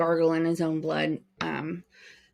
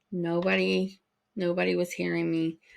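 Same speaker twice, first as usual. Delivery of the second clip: ordinary talk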